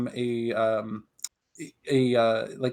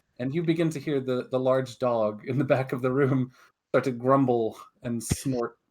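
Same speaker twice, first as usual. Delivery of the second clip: ordinary talk, nothing marked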